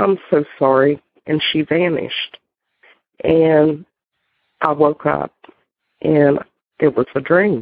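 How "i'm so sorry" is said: normal talking voice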